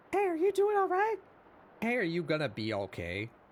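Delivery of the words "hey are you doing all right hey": put-on very high, swooping, squeaky tiny little girl mouse voice. Retelling an improvised moment at the table, the speaker voices the mouse character in a tiny girl mouse voice. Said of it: "a man doing a tiny small girl mouse voice".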